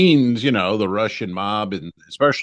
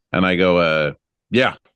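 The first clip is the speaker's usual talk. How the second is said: plain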